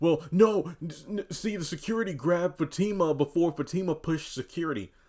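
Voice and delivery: high-pitched mocking voice. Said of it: "for everybody's like".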